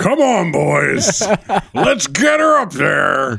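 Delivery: gruff, slow, rough-edged character voice. Acting out tugboats guiding a big ship into the harbor, tugboat voice. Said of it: "that's a tugboat voice".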